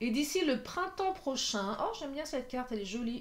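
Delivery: voice going up high.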